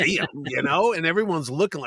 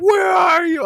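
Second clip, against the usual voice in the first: very high, shrill, loud screaming yell; 12 semitones higher, 7 dB louder than usual. Retelling a wife's phone call during a late arrival: imitating wife screaming. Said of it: "And she's screaming".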